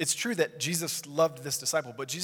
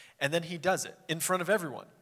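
normal talking voice

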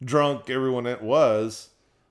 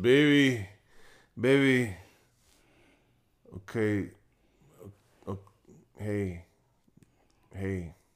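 put-on drunk man voice. Retelling a wedding toast by a groom: imitating a drunk groom. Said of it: "liquored up".

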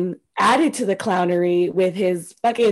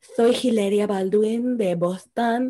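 slight put-on Spanish accent with a little lisp. Retelling how Hilaria Baldwin talked: Hilaria Baldwin's put-on Spanish accent. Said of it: "She had the little lisp".

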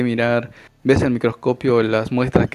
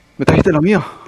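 thrilled, high, loud, bursting with excitement; 5 semitones higher, 5 dB louder than usual. Voicing a character who raises his arms: very excited. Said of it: "está muy emocionado".

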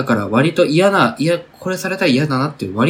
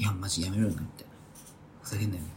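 acted muttering grumble, much quieter, lower; 6 semitones lower, 17 dB quieter than usual. Acting out how someone complains after the other person leaves, imitating a muttered complaint. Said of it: "ちっちゃい声で、文句言うみたいな".

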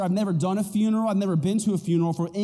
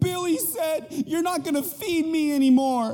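mock high, weepy, crying little-kid voice; 8 semitones higher than usual. A parent hears their daughter crying, imitating a crying child. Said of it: "your daughter's crying".

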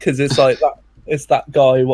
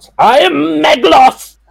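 sudden amped-up, very high, rough shout; 14 semitones higher, 5 dB louder than usual. Quoting a character from an episode: imitating a shout. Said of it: "he just shouts".

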